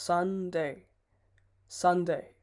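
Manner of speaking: Sunday stressed harder.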